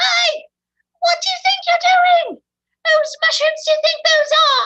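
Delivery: very high, loud, shrill tiny angry fairy yell. A game master voices the tiny winged fey confronting the party, little angry fey voices. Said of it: "you can hear their little angry fey voices".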